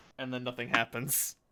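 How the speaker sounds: ordinary talk, nothing marked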